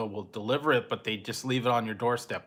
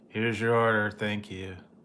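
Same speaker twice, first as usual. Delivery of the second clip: unenthusiastic, depressed-sounding voice. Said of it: "little more enthusiasm in it?".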